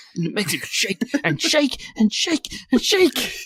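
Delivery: silly, high, slow, drawn-out singsong.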